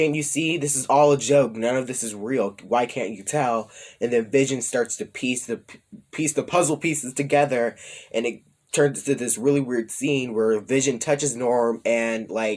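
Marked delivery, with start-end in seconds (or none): none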